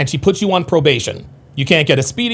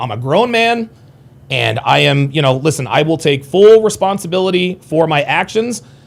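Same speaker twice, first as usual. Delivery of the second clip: normal talking voice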